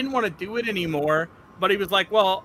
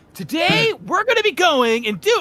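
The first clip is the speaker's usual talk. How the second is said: voice pitched way up; 10 semitones higher, 5 dB louder than usual. Imitating a generic kids' Minecraft influencer opening a video: generic kids' Minecraft influencer voice. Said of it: "the very generic, like, influencer, Minecrafter voice guy for kids".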